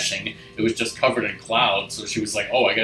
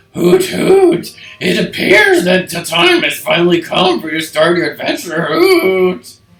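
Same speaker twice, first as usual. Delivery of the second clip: booming, swooping sing-song bunny voice with long hoots; 8 semitones higher, 10 dB louder than usual. Reading the owl's lines aloud in a game: bunny voice. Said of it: "the bunny voice".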